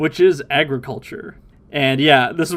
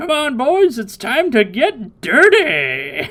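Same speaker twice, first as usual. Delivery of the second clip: put-on very high, slow, drawn-out, leering, lecherous old-man voice; 11 semitones higher than usual. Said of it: "Roshi says".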